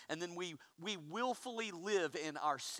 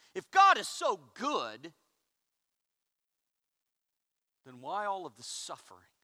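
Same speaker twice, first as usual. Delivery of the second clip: put-on, very loud, swooping voice dripping sarcasm and disdain; 9 dB louder than usual. Speaker imitates critics trying to shame God; mock sarcasm and disdain. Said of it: "said dripping with sarcasm and disdain".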